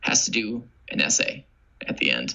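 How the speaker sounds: plain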